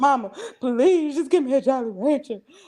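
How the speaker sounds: put-on, desperate, crying, tearful, begging tone. Retelling own words to Mama during active labor: imitating own begging. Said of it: "I was begging all type of shit".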